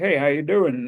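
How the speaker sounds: casual, put-on Texan accent. Retelling how a man in military gear came over and greeted him, imitating a texan accent. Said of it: "And like with a Texan accent".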